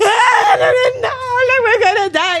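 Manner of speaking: put-on frantic crying wail, high, loud, panicked. Retelling mom panicking in a cave with a life vest: imitating mom's panic. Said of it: "that woman was in the trenches".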